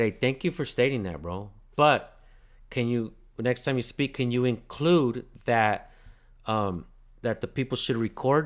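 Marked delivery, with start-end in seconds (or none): none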